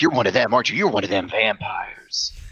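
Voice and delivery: sharp, snapping delivery. Narrating a story, a man with a shotgun looks down the hallway, snapping. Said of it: "then snaps like".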